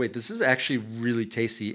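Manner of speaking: ordinary talk, nothing marked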